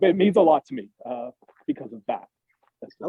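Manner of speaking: choked-up, emotional voice catching. Speaker explaining what something means to them, getting a little choked up. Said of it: "I'm getting a little choked up".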